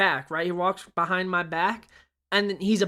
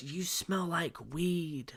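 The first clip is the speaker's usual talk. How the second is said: hushed half-whisper, very soft, barely there; 11 dB quieter than usual. Retelling what the person sitting beside them half-whispered, half-whispering. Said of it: "That's what she whispers to me".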